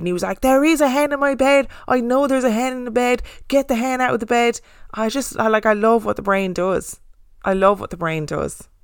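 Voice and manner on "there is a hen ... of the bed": mock freaked-out, insistent, screaming voice. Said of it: "screaming because he thought there was a hen".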